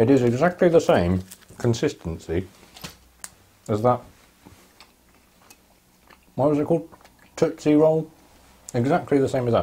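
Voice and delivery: talking with mouth full, chewing. Tasting a sweet on camera for viewers, talking with mouth full. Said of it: "I shouldn't talk with my mouth full".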